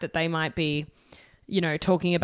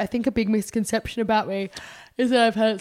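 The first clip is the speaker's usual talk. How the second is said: talking through a yawn; 4 semitones higher than usual. Quoting Kylie in a conversation, while yawning. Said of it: "sorry, I'm yawning".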